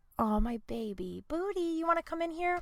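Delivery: sweet, soft, high pet-talk voice.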